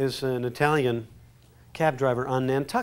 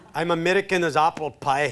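put-on Scottish accent. Doing requested accents one after another, now scottish: scottish accent.

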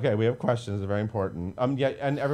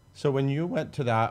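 voice cracking, higher pitch; 4 semitones higher than usual. Asking a guest about their high school audition, voice cracking. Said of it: "my voice cracked on that question".

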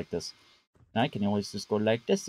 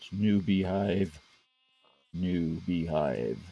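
deep, slow, deliberate voice; 5 semitones lower than usual. Talking about making a new beehive, deeper voice. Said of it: "Why did my voice get deeper?".

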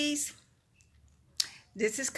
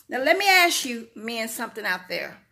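normal talking voice

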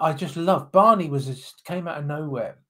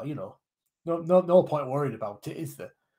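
bad put-on Yorkshire accent, sardonic, bluff, unbothered. Speaker imagining a Yorkshireman nothing bothers, voicing him in a bad Yorkshire accent. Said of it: "that your Yorkshire accent".

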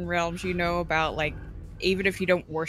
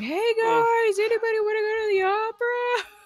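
mock, very high, drawn-out hollering scream; 5 dB louder than usual. Retelling what they shouted at everybody: imitating own screaming. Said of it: "screaming at everybody".

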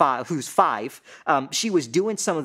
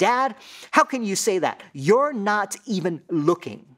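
acted-out sassy little child voice, about five years old; 5 semitones higher than usual. Father retells his five-year-old daughter calling him out, imitating five-year-old sass. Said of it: "in her five-year-old sass".

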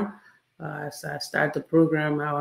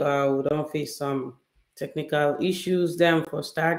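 usual speaking voice

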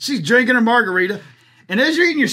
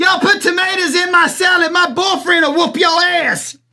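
mock screaming, high-pitched; 6 semitones higher, 3 dB louder than usual. Retelling a date who yells from the bathroom: imitating her screaming. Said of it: "you hear her screaming in the other room".

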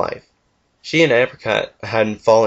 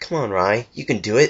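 tender, soft, coaxing, encouraging coo. A mother coos to her little one taking his first steps: cooed encouragement. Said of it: "Winstreak cooed encouragement".

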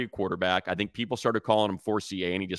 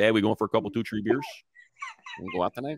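full, sing-song Wisconsin accent. Describing how they sound back home in Wisconsin, Wisconsin accent. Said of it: "I sound like".

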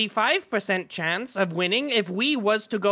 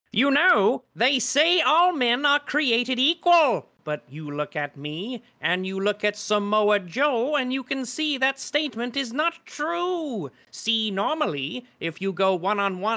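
cartoonish skeleton villain voice. Reading a copypasta aloud as requested, in a Skeletor voice. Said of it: "read the Scott Steiner copypasta in your Skeletor voice".

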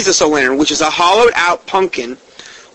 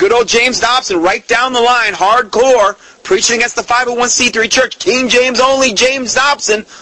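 tongue-in-cheek sarcastic tone with raised pitch; 6 semitones higher than usual. Commenting on James Dobson after the radio program about Halloween, be a little sarcastic. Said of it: "Just to kind of be sarcastic there a little bit".

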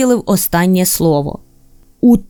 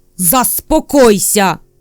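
snapped sharply, barked. Reading fiction, the lodger character turns on the narrator: barked. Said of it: "Гаркнув підселенець".

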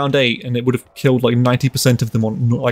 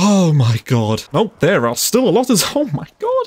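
in a panic, panicked voice; 5 semitones higher than usual. Playing a zombie game as zombies keep spawning, panicking. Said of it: "I'm just panicking".

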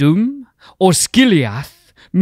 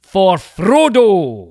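put-on Scottish accent, drawn out; 4 semitones higher than usual. Reading out a quiz answer option as a quote: Scottish accent. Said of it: "your awesome Scottish accent".

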